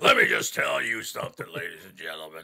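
deep, low, booming wrestler voice. Telling others about a favorite wrestler: imitating the Crusher's voice. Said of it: "invented talking like this".

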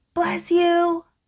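high whispering. Narrator reading a lion leaning out after a neighbor sneezes, whispering. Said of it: "Lion leans out and whispers".

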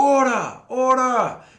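very high, very loud, ethereal otherworldly calling voice. Describing a scene where a figure behind you calls for attention, loud ethereal Valorin voice. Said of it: "with this like loud, almost ethereal voice".

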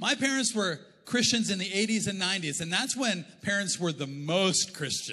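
ordinary talk

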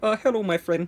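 exaggerated poor Indian accent. Retelling what a man said to him; worst Indian accent. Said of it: "it's the worst Indian accent".

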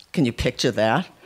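ordinary delivery

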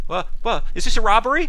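very high, very loud, startled, caught-off-guard stammer. Voicing a woman behind a counter as people burst in: startled and uncertain. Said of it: "she kind of looks startled and un-, uncertain".

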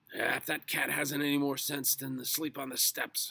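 very loud, shrill, snapping retort. Narrator reads Mr. Grumpy's reply after Mrs. Grumpy coos to the cat, snapped. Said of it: "snapped Mr".

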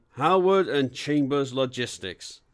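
ordinary delivery

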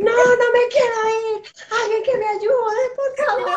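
very high, loud, shrill, desperate acted scream. Retelling a woman clinging to her plane seat, imitating Lorna screaming. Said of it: "mirando a Lorna como gritaba".

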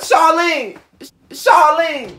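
loud, high-pitched hollering yell. Calling for Charlene after learning the boy has Tinder: yelling. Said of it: "Why are you yelling?".

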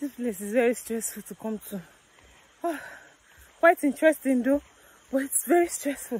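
out of breath, panting. Speaker on a cave tour with a guide, talking to viewers: out of breath, panting. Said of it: "I'm panting".

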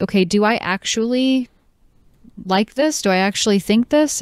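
normal talking voice

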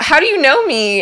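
high, loud, surprised exclaim.

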